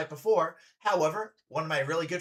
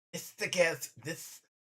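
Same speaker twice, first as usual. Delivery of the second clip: quieter, snake-like voice; 6 dB quieter than usual. Trying out an accent using a friend's tongue-placement tip, sounding like a snake. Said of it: "I sound like I sound like um the fuck is that uh, the snake?".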